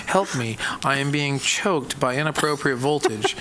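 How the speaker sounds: ordinary delivery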